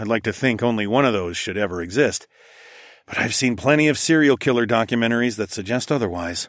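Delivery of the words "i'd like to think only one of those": plain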